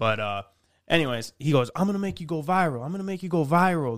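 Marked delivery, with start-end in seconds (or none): 1.7-4.0 put-on Jamaican accent. As a guy promising to make someone filming with a camera go viral, use a put-on jamaican accent. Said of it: "he's like got this Jamaican accent".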